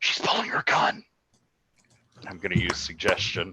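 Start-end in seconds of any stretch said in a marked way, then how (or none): 0.0-1.0 fast whisper full of shock and alarm. In a tabletop game, a player's character whispers into a companion's ear in shocked alarm. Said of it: "with like pure shock and alarm in my voice".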